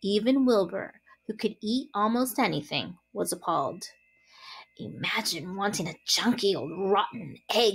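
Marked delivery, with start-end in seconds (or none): 4.8-7.8 grumbled under the breath with distaste. Watching the rat roll the egg away, he mutters: muttering. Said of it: "he muttered".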